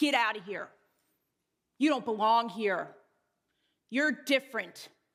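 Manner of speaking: play-acted nasty snarl like a seven-year-old. Recalling childhood fights, quoting what Laura said, imitating Laura's snarl. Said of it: "she would snarl".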